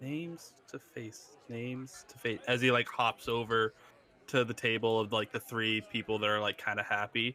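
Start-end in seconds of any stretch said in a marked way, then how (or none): 0.0-2.4 very quiet, barely audible, repeated muttering. A character mutters to himself while hopping over to a table. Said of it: "he like mutters to himself".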